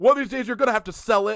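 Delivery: shrill, loud, high-pitched screaming. Retelling a movie scene where a man screams at her: imitating a scream. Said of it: "he literally just screams at her".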